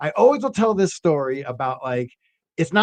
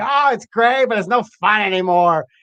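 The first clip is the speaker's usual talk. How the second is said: put-on drunk speech, higher and louder; 4 semitones higher, 4 dB louder than usual. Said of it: "And he's drunk".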